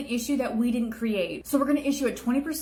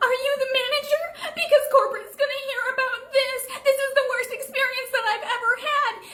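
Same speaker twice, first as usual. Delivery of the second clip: very high, put-on, fake tearful crying voice; 4 dB louder than usual. In a skit, a customer arguing with staff over a tip, fake crying voice. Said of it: "It's my fake crying voice".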